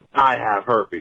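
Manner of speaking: put-on, heated, really angry woman's voice. Retelling a woman's line about herpes: imitating an angry woman. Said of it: "She says it really angrily".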